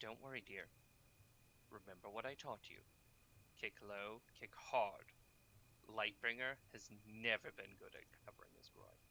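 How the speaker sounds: soft motherly voice. Narrating to a player, a voice speaks after a bright flash: very soft, motherly voice. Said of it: "a voice, very soft, motherly almost".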